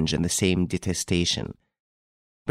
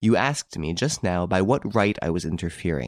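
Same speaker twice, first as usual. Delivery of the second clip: plain reading voice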